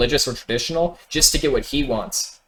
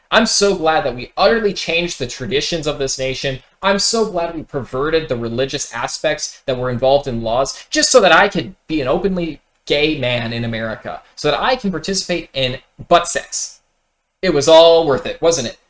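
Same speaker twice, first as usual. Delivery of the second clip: ordinary talk, nothing marked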